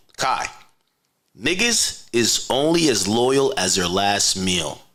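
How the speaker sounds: slow, careful, deliberate delivery, each word laid out. Speaking to kai, repeating a point for him, speaking slowly. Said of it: "let me say it slowly".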